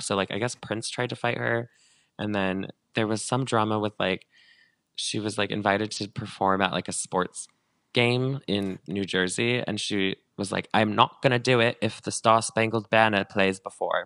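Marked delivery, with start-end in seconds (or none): 10.7-14.1 put-on British accent, raised voice. Quoting a woman who was invited to perform, in a British accent. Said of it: "that was a British accent".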